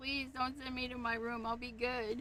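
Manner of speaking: acted, beseeching, earnest, pleading, begging voice. Telling a story about a pet octopus sent to his room: pleading as Spot. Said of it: "Spot is, like, pleading".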